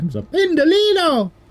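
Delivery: put-on Italian accent, very high pitch. Streamer asked by a viewer to say Pendolino in an Italian accent: Italian accent. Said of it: "say Pendolino in an Italian accent".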